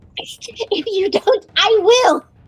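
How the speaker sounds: slow, high-pitched cackling creature voice. Game master narrating a scene to the players, voicing Nosferatu, in a cackling Nosferatu voice. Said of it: "he kind of cackles, looks at you, and goes".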